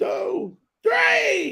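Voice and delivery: excited shouting, yelling.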